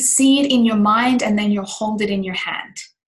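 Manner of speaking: ordinary talk, nothing marked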